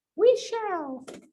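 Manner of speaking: squeaky, very high put-on student voice. Answering own question the way the students would: put-on student voice. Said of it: "That's my student voice".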